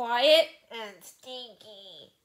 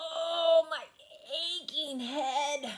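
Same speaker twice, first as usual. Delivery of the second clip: pitched-up, aching moan; 5 semitones higher than usual. Narrator reads a character after crashing off an edge: moaning. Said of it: "moaned Sam's voice".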